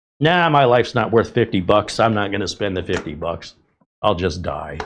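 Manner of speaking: throwaway, dismissive sarcastic tone. Joking after saying the device could save your life: mock sarcastic tone.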